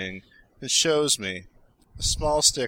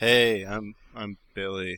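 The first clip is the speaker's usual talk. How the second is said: glum, down, lower-pitched voice; 5 semitones lower than usual. Introducing yourself as Billy to the others, sounding down. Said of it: "you sound kinda down".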